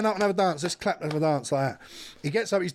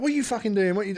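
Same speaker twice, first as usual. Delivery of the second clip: put-on polite tone, higher; 3 semitones higher than usual. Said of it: "I was being polite".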